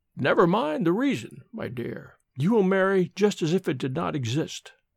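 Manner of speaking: usual speaking voice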